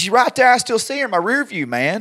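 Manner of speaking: fed-up, exasperated tone.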